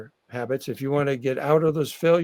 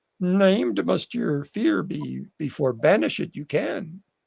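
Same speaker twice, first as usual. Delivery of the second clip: creaky put-on character voice; 3 semitones higher than usual. Quoting a famous philosopher from Star Wars, in a Yoda voice. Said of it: "I'll do the voice".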